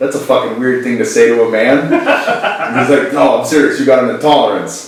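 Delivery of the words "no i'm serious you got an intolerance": put-on thick, broad New York accent. Retelling what a man told him about an intolerance, in a thick New York accent. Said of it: "he's got a thick New York accent".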